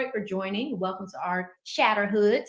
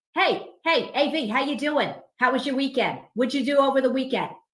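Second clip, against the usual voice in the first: put-on Boston accent of a corporate guy; 4 semitones higher, 4 dB louder than usual. Imitating corporate guys in Boston greeting him after the weekend, Boston accent. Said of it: "mix that with the Boston accent".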